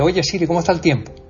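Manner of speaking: quick, clipped delivery. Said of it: "le pido, imagínate".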